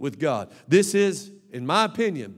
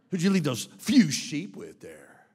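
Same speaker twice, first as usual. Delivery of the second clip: put-on angry voice. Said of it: "It's probably more mad".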